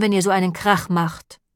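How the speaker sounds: plain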